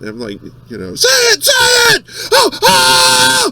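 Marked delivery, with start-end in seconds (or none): 0.9-3.5 very high, slow wailing scream, oh stretched. Retelling screaming along to a comedy album: screaming Sam Kinison impression. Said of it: "Why are you screaming?".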